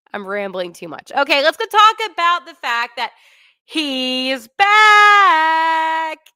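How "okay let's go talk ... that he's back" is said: loud, excited yell with "back" stretched out. Speaking to the audience about someone coming back, excited yelling. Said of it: "I'm yelling that because I'm excited".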